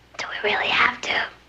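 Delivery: hushed whisper. Replying to a call to rehearse the death scene: whispering. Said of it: "What are you whispering for?".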